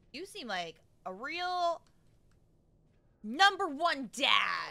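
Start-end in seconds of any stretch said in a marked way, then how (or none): 3.2-4.7 loud, swooping mocking sarcasm on "number one dad". Reacting to her dad, sarcastic on number one dad. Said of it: "Notice the sarcasm when I say number one dad".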